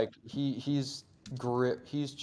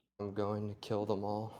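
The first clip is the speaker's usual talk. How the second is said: low, hushed voice under the breath; 3 semitones lower, 5 dB quieter than usual. Narrating a character who barely seems present, speaking in a low voice. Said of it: "he just says in a low voice".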